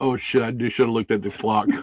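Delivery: put-on startled, panicked, alarmed voice. Retelling what a woman said when she realized the time, imitating startled alarm. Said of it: "you can tell in her voice".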